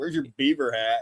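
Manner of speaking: mock-sarcastic, ribbing tone. Retelling how he ribbed another man with a question, mock-sarcastic. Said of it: "he's like sarcastic about it".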